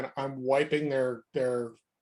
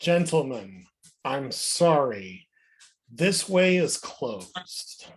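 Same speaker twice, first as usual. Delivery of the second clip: slow, menacing, deliberate tone, sorry drawn out; 3 dB louder than usual. Player's character blocks fleeing prisoners from the back of the group, intimidating. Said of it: "Give me an intimidation check".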